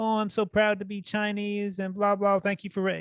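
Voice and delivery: feeble, pathetic, very high little voice. Mocking a fighter's post-fight speech: imitating a pathetic speech mockingly. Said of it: "her little pathetic fucking".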